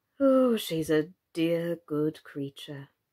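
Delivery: soft murmur, said inwardly. The king, opening his memorandum book, repeats the words softly to himself. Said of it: "he repeated softly to himself".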